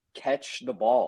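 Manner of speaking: mild, hollering yell. Recalling players dropping easy catches, retelling screaming at the TV. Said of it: "I'm screaming at the T V".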